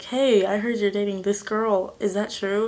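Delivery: ordinary delivery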